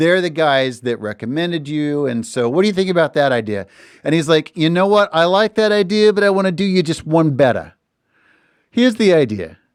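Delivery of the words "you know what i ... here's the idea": put-on slight New York accent, pitched up. Speaker retelling a man's reply to a business idea, in a New York accent. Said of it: "I should not have lapsed into, into accent".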